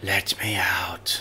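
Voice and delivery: very low, hushed whisper. A voice heard as a player walks off with a bag, a whisper. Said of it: "you can hear a whisper".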